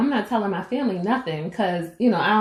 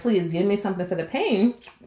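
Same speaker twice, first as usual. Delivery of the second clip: normal talking voice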